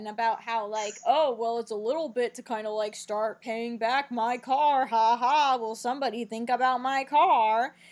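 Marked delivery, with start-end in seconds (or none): 1.0-7.6 put-on obnoxious jerk voice, louder. Retelling what a character said about being paid back: imitating Spinner being a jerk. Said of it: "Spinner is just a total asshole about it".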